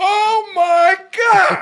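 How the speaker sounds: high, wild, unrestrained yelling. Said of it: "You're yelling at it".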